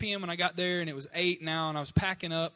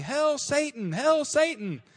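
mock long, slow, high, drawn-out shrieking scream; 9 semitones higher, 5 dB louder than usual. Retelling a stranger lifting his coffee to the sky: imitating someone screaming. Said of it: "he starts screaming".

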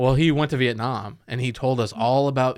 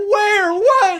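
acted high, frightened, confused, bewildered blurt; 7 dB louder than usual. Recalling waking as mom shouts about an attack, retelling scared confusion. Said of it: "I'm just scared".

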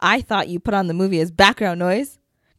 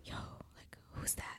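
very quiet hushed whisper. Showing how people normally whisper about a stranger: imitating a whisper. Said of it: "you'd whisper".

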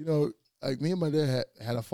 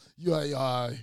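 plain

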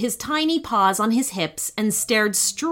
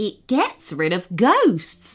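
smug, self-satisfied, pleased-with-itself know-it-all tone. Narrator voicing the mouse explaining the ghost light to Oscar, smug. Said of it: "said the mouse smugly".

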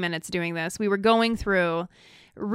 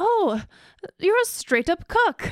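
attempted English accent, much higher; 10 semitones higher than usual. Host reading hateful messages aloud, in an attempted English accent. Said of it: "that's my attempt at an English accent".

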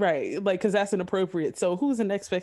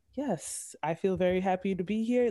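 put-on soft-spoken man's voice. Describing a man being picked up at the airport, imitating a soft-spoken man. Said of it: "He is so soft-spoken".

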